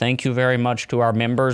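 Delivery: put-on flat, low-energy monotone voice. Contrasting everyone's energy levels, the speaker imitates Smay's low energy. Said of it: "Smay is just over there like".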